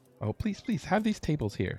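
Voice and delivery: very high-pitched tavern barmaid voice. Voicing the barmaid greeting newcomers at the Golden Anchor: barmaid voice. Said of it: "the barmaid here".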